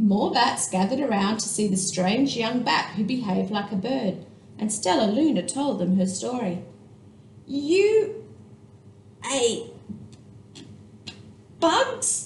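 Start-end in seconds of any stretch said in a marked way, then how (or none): 7.5-12.3 high voice, stuttering, words catching on the way out. Reading a bat reacting to a strange young bat's story: stuttering. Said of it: "stuttered one".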